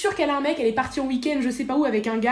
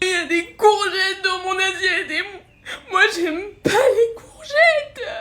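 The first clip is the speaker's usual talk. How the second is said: put-on weepy little child voice, high and slow sobbing; 7 semitones higher, 3 dB louder than usual. Asked again and again why they are crying, answering while crying. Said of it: "Pourquoi tu pleures?".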